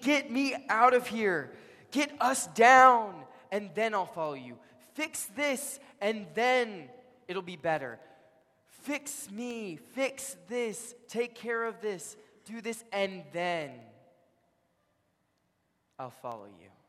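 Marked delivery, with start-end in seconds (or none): 0.0-13.7 very loud, high, demanding scream. Retelling a dying criminal demanding Jesus fix things: acted-out screaming. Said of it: "he starts screaming at him, screaming".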